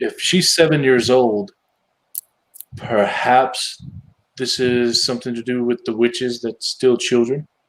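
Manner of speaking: confiding, voiced stage whisper aside. Speaking aside to a companion in the scene, half-whispering. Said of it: "I'm whispering again to Jordan".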